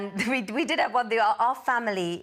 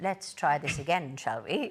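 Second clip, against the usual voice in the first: put-on plummy posh accent, very deep and low; 7 semitones lower, 4 dB quieter than usual. Retelling a caller who rang back after being brushed off: very posh voice. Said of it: "in a very posh voice".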